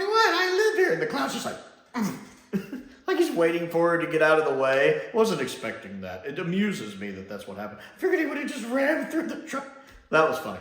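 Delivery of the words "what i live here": much higher, louder, surprised indignant squeak. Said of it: "she's like".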